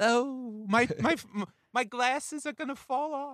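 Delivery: very high, prissy, effete New York voice. Riffing on a character, the speaker does an effete New Yorker voice. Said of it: "he's an effete new yorker like".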